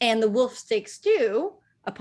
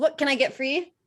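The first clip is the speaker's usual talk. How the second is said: higher-pitched, mild Scottish lilt. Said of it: "She's, like, Scottish now".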